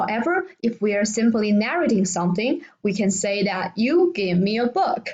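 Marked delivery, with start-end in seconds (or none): 3.8-5.1 pitch drops away on "book". Explaining intonation when simply narrating, falling pitch at the end on 'book'. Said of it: "It has a falling tone in the end".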